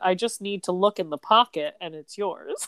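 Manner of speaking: normal talking voice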